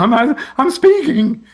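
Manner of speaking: high, loud, amazed, excited exclamation.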